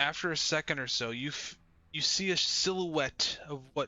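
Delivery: ordinary delivery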